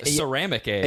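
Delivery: ordinary delivery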